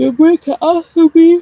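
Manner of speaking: very high, loud words through a yawn. Speaker telling viewers to take breaks from the app, yawning while talking. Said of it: "I don't know why I'm yawning".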